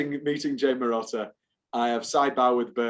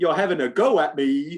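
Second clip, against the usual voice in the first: loud, put-on Southern accent; 4 semitones higher, 5 dB louder than usual. Quoting their own line from a mockumentary feature film, in a southern accent. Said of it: "I say the phrase in a southern accent".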